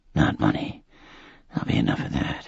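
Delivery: weak, faint, whispery voice trailing away. Narrator reads an ailing man's words to his son, in a fading whisper. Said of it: "his whispery voice fading further".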